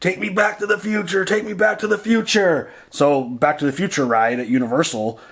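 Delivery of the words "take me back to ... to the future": put-on high-pitched child screaming. Retelling screaming at the garage door as a child, retelling a childhood scream. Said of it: "I was screaming".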